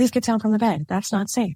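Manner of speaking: put-on urgent, lifted voice. Speaker retells warning someone standing near a bed's edge, retelling a raised voice. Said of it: "And I raised my voice like".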